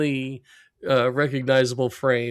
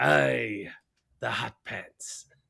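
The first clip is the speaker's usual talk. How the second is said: very slow, rough, raspy sea captain voice; 4 dB quieter than usual. Retelling a cartoon scene, voicing the sea captain: sea captain voice. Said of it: "And he goes".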